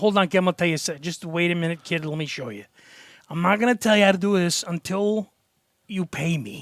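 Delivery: put-on Chicago accent, old man voice. Retelling an old guy showing the young speaker a cigarette trick: old guy's Chicago accent. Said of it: "like the Chicago accent".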